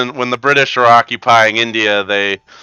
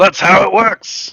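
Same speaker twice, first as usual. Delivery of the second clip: put-on angry Cockney accent, higher; 9 semitones higher than usual. Voicing a growling creature defending its kills: angry Cockney voice. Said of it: "angry, like, like, Cockney voice".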